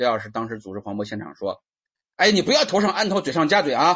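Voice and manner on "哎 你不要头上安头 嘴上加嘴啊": very high, shrill, loud, forceful, exclaiming delivery. Imagining how a master said a recorded line: acted exclamatory tone. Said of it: "可能是这种语气，因为是叹号".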